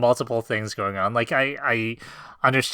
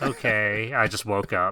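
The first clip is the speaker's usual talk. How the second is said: put-on bored voice; 2 semitones lower than usual. Mocking how the anime shows Jinwoo: bored Jinwoo voice. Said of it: "the anime is sort of like".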